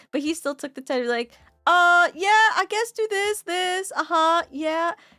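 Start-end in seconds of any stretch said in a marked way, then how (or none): 1.6-4.9 slow, pitched-up, half-listening, distracted brush-off. Retelling how a teammate answered while in the middle of a heist: imitating someone sounding busy. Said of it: "sounded like he was a little busy".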